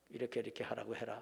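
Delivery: low, soft, creaky royal murmur like a king.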